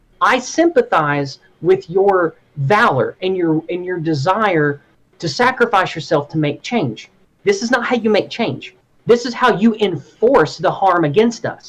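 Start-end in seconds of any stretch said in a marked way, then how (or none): none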